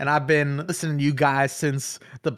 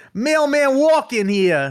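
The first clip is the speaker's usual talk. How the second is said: put-on New York accent; 11 semitones higher, 6 dB louder than usual. Reading an all-caps line aloud in character: New York accent. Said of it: "Nate wanted me to read it in a New York accent".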